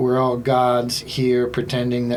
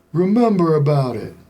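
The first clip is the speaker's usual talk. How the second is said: loud, pitched-up, muddled, confused voice; 5 semitones higher, 5 dB louder than usual. Retelling a friend's comedy bit: De Niro with Alzheimer's impression. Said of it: "De Niro with Alzheimer's impression".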